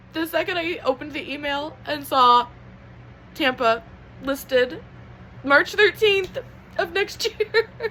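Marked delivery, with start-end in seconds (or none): 6.8-7.7 high, tearful, happy sobbing. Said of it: "I'm crying and I can't stop crying".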